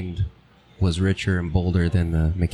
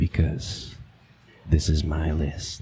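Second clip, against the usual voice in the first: deeper, dramatic voice with more bass; 3 semitones lower, 4 dB quieter than usual. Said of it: "A little bit more bass".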